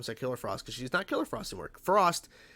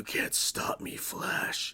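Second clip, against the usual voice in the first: deep, very slow villain voice, every word dragged. Retelling how Deathstorm, speaking through her body, taunts Flash: deep Deathstorm voice. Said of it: "using this deep, deep voice".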